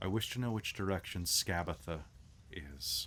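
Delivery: soft, quiet voice with faint, seeping menace. When he shakes the item, a message sounds: Luthien's voice, hint of murder. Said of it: "a little hint of murder in it".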